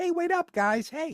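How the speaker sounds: very high-pitched ice-cream-man voice, called out. The speaker recalls how his voice sounded next to the others, sounding like Skippy the ice cream guy. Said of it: "I sounded like Skippy the ice cream guy".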